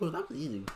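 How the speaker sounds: clumsy, unconvincing put-on girly voice. Acting out a cartoon scene after a cut: put-on girl voice. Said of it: "I can't do a girl voice".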